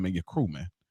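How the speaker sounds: smug, taunting delivery. Retelling how a movie character taunted a crew, imitating a cocky movie line. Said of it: "just how he said it".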